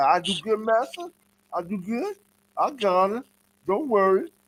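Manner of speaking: put-on whiny voice near tears, high and slow. Describing the Edomite's little whiny crying face, imitating his whiny crying. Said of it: "he got that little whiny crying face like".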